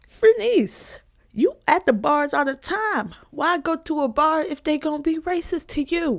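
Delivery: very high, mocking voice.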